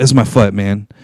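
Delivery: fake gloomy low slow voice. Retelling a player answering a trainer at practice, imitating Ronald sounding depressed. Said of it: "that's literally how Ronald's talking".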